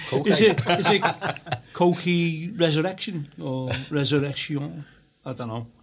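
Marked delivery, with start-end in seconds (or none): 0.3-4.8 giggly, laughing through the words. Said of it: "can you pronounce that again".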